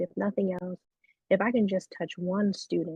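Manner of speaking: usual speaking voice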